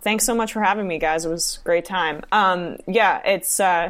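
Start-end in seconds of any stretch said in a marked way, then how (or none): 0.0-2.2 sarcastic-sounding. Thanking the hosts at the end of an interview: sarcastic-sounding thanks. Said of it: "that sounded sarcastic".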